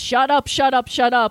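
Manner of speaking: usual speaking voice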